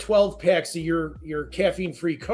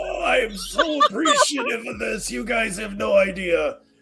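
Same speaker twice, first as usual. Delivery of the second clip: put-on old, decrepit, frail voice; 5 semitones higher than usual. Retelling walking in the door for the delivery people: retelling acting old and decrepit. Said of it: "I kinda walked in the door going".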